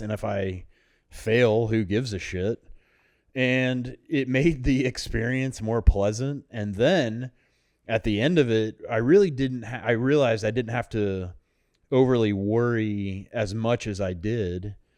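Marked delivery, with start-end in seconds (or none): none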